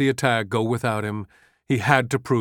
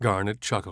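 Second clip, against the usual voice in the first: plain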